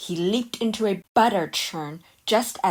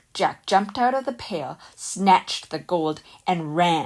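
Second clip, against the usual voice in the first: plain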